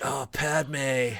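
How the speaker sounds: laid-back surfer dude voice. Describing an audiobook's voice actor, imitating Anakin as a surfer bro. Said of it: "did Anakin as a surfer bro".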